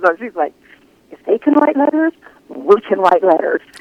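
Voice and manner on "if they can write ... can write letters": hushed, half-voiced stage whisper. Retelling what a detective said outside the courtroom: imitating someone half-whispering. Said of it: "whispering so Clem couldn't hear her".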